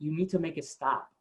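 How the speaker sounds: put-on sobbing, crying female voice. Retelling a phone call from a woman: imitating a crying woman. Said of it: "just crying".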